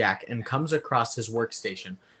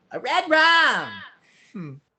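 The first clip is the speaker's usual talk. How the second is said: odd, very high, loud, swooping, exaggerated shriek; 10 semitones higher, 5 dB louder than usual. Retelling a movie scene where a boy starts screaming, Danny's odd screaming voice. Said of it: "Danny starts screaming in a odd voice".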